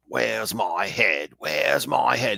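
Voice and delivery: put-on ghostly British pirate accent, calling out loudly. Retelling a ghost legend of a pirate calling over the wind: British pirate accent. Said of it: "that British pirate accent".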